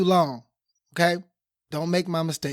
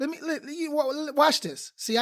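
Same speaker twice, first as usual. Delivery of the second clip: excited, pitched-up stutter tripping over words; 10 semitones higher, 4 dB quieter than usual. Trying to start an example with the audience: hyped up and stuttering. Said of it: "y'all got me stuttering 'cause I'm hype".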